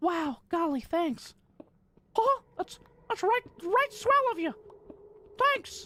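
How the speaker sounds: very high-pitched cartoon mouse voice. Answering a viewer's message, the speaker thanks them in Michael Mouse voice. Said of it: "falling back on that Michael Mouse voice".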